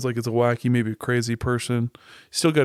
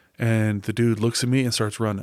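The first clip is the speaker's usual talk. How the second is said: usual speaking voice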